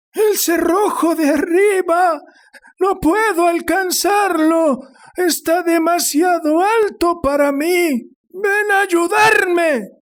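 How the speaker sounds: frantic, breathless, very high, strained panting shout. An old woman at the door calls out to her husband: strained, panting shout. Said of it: "gritaba la anciana fuera de sí. / gritaba la anciana fuera de sí. / gritaba la anciana fuera de sí. / Lo único que quiero es que mi hijo vuelva a casa, / respondió histérica. ... temblando de excitaci".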